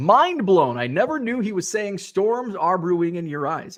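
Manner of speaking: ordinary talk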